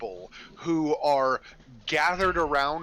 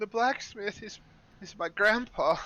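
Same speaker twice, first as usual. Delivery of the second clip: put-on held-back tears, higher; 6 semitones higher than usual. Retelling how he spoke while trying to be brave, imitating someone holding back tears. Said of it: "he's trying to be brave and he's trying not to cry".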